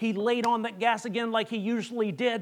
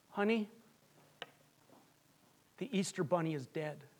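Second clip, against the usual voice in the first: hushed, very quiet, soft-spoken voice; 5 semitones lower, 10 dB quieter than usual. Retelling a father answering his wife's question; retelling in his quiet voice. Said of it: "in his quiet voice".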